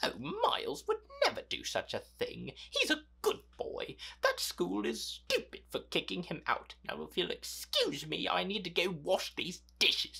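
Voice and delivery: awful, high-pitched put-on British accent. Retelling a scene where Kate gets a call from the school, awful British accent as Kate. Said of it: "Please ignore my awful British accent".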